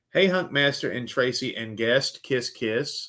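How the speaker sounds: ordinary talk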